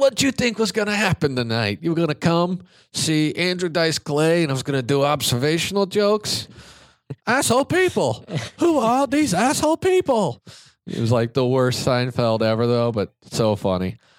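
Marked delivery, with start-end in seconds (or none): 0.0-10.4 very high, swooping, needling, mocking rant. Retelling Dice berating an angry audience member, Andrew Dice Clay impression. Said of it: "he kept doing his impression".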